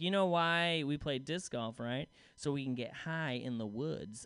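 mock condescending, self-satisfied, smug low tone. Comedian retells a lady approaching him after a show, mock-smug. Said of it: "she was like all smug".

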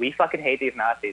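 ordinary talk

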